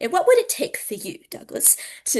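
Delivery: polite put-on British accent. Retelling how Justin asked Douglas a question in their conversation, in Justin's polite British accent. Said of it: "it's that lovely accent he has".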